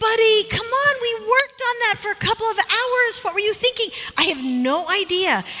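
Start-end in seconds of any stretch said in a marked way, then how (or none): 0.0-3.9 voice climbing high in exasperated, fed-up disbelief. Retelling scolding him for forgetting to turn in a project: retelling own rising voice. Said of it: "my voice rises".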